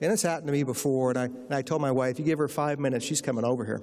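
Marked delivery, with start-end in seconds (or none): none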